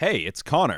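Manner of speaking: show-host announcer voice. Giving a name at the start of the podcast: announcer voice. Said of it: "Connor with the announcement voice".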